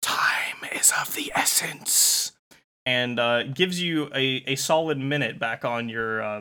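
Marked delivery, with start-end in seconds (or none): 0.0-2.3 soft, breathy, disembodied whisper. Voicing a disembodied Lego voice speaking to the players as it disappears: whispering. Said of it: "the Lego voice whispers to you".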